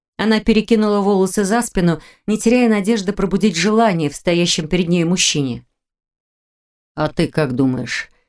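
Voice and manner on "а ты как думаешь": grim tone, lower and slower. A man answers a woman who asks if he still feels unwell; asked grimly. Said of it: "мрачно осведомился Непогодин".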